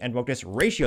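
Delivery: ordinary talk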